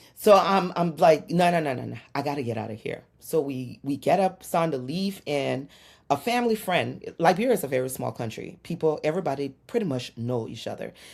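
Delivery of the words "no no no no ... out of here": put-on hungry-sounding irritation, annoyed tone. Retelling refusing to stay in church while hungry: imitating hungry irritation. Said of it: "when you're hungry, everything pisses you off".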